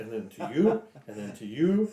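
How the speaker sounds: ordinary delivery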